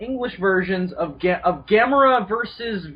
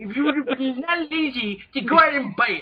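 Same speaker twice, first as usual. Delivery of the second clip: snobbish nerd voice, higher pitch; 3 semitones higher than usual. Retelling a friend's snobbish message: snobbish Comic Book Guy voice. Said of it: "the most snobbish fucking I M".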